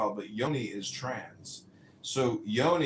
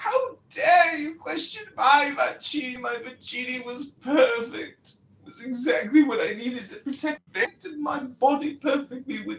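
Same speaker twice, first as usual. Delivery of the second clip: very high, loud, scornful, put-on English accent; 14 semitones higher, 5 dB louder than usual. The speaker mocks a man by imitating him in an English accent. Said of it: "mocking him in my English accent".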